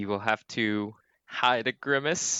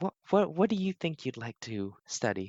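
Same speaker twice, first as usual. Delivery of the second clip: put-on motherly voice, faster; 3 semitones higher than usual. Game player voicing Dee, leaning over to ask Bromara: Dee's motherly tone. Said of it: "kind of lean over like a, a a mom".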